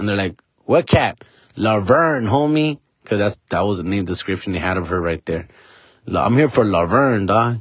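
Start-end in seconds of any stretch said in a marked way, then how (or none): none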